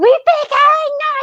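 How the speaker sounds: shrieking scream at a very high pitch. Retelling how the main girl in Blair Witch kept screaming: imitating someone screaming. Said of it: "she just kept screaming".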